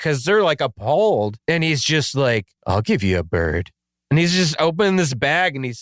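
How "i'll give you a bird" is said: very low, sinister, creepy voice. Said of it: "they keep giving him this real creepy grin".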